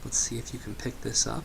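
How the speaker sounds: hushed, soft, barely audible whisper. Testing a trail camera's microphone from close up, whispering. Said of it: "Now I'm going to whisper a little bit".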